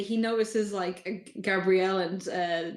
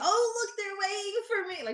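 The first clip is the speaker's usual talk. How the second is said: really loud, very high call-out; 13 semitones higher than usual. Game master voicing a character arriving in the scene, calling out really loudly. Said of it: "like really loudly".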